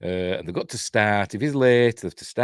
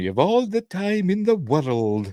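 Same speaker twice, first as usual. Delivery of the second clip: put-on high-pitched Scottish accent; 10 semitones higher than usual. Talking about a cast member, the speaker quotes Alan Young in his Scottish accent. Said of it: "That's how he does his Scottish accent".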